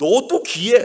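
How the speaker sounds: put-on loud childlike voice, laughing through it.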